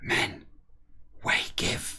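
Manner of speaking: soft, hushed whisper. Reading a character's whispered order to the men: whispering. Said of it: "I don't know why I'm bothering whispering".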